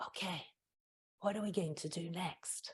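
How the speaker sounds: hushed, very soft, very quiet whisper. Showing how to quietly get students' attention: whispering. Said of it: "or when I whisper".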